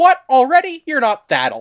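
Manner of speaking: acted cheeky, swooping quip. Fan retelling a scene where Thomas answers Edward, snarky Thomas impression. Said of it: "Thomas makes that snarky comment like".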